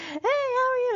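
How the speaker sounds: mock, loud, very high, shrill shouting. Imitating young women at the hospital greeting a man who couldn't understand them: imitating a loud high-pitched yell. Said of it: "they'd like yell, you know, really loud, but still in the high pitched tone".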